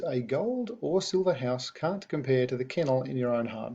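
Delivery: ordinary delivery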